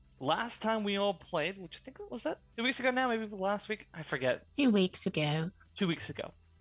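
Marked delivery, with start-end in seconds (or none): 4.6-5.5 Victorian Dickensian workhouse orphan voice. Repeating their own words from a moment ago, Dickensian orphan voice. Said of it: "I said it like that, like I'm a Dickensian orphan".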